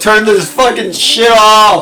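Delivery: shouting. Telling someone to turn off the music: yelling. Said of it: "Stop yelling".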